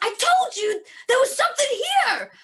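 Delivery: high-pitched shrill yelling. Voicing a character shouting up toward the cliff: character yelling. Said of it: "'cause she was yelling up that way".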